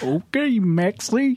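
high-pitched put-on cartoon character voice. Speaker shows the only cartoon voice they can do; Goofy voice. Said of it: "I can only do Goofy".

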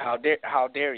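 disgusted, scornful voice. Retelling how the bosses reacted to leaving before the truck was done: imitating disgusted bosses. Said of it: "such disgust".

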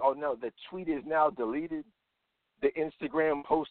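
normal talking voice

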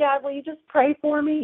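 put-on small, high, childlike pleading little girl voice. Speaker retells asking her dad to pray for her: little girl voice. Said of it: "like in that little girl voice".

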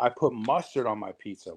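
plain

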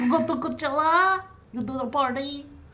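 high, excited Eastern European accent.

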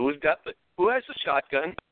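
put-on Canadian accent. Retelling what the boat captain asked, imitating a Canadian accent. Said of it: "he's got a fairly Canadian accent".

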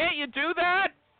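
high-pitched shouting. Urging the other speaker to make them laugh: yelling. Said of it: "Stop yelling at me".

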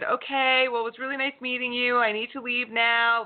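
put-on polite voice, fairly loud and high-pitched. Retelling how she left a bad date: imitating someone saying it loudly. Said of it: "she said it kind of loudly".

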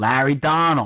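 New York Brooklyn dialect. Imitating a cousin saying a name, Larry's Brooklyn accent. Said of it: "with his Brooklyn dialect, I can hear him saying".

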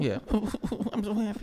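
mock crying, high and sobbing, tearful.

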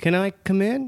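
put-on high small child's voice. Retelling what a voice at the door kept asking: little kid's voice. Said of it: "like a little kid's voice".

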